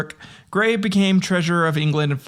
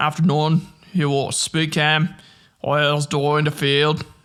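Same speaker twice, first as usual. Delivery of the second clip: put-on Scottish accent, lower pitch; 2 semitones lower than usual. Trying to recall an accent he did for one episode, in a scottish accent. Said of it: "I Scotland".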